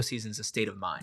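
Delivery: choked-up, soft delivery.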